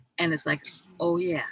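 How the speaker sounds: usual speaking voice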